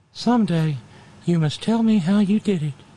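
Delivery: thin, reedy, high-pitched voice. Act out Jefferson turning to face Adams, in a high, thin, reedy Jefferson voice. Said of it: "High, thin, reedy voice".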